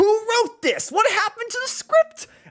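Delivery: mock angry ranting voice. Retelling own video narration, imitating own pissed-off video voice. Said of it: "where I'm like".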